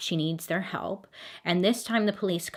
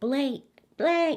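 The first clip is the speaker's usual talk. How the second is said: high, acted, calling-out yell; 9 semitones higher than usual. Telling a story about a woman calling up to an apartment window, imitating someone yelling. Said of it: "So she's yelling".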